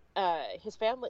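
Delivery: normal talking voice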